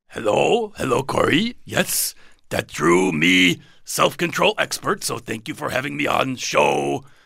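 furry monster puppet character voice. A very special guest greets the host and gives thanks for being on the show, in Cookie Monster voice. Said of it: "It's Cookie Monster in the fur".

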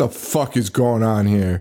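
put-on irritated doctor voice, slow, super-annoyed. Retelling a movie scene where a doctor walks in pissed: imitating an annoyed doctor. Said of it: "Super annoyed".

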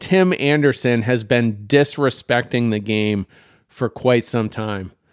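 ordinary delivery

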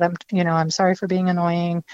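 plain

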